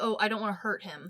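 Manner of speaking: normal talking voice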